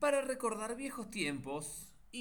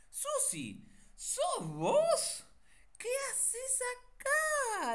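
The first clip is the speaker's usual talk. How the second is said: astonished, very high, very slow, rising pitch; 3 dB louder than usual. A narrator reads one woman greeting another unexpectedly: surprised. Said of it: "Le preguntó Rita sorprendida".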